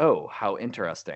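ordinary talk

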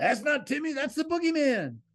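shrill, very high holler. Retelling how a guy behind them yelled at the screen: imitating someone yelling. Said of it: "this guy behind us in the theater yells out".

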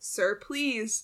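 begging, pleading, imploring. The narrator pleads with a kid in an act of desperation: begging. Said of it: "I begged".

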